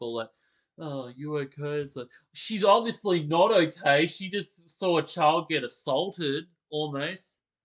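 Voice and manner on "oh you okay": mock miserable, uncaring, heartless flat voice. Mocking how a father asks after the upset mother: imitating a miserable, uncaring tone. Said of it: "sounds miserable".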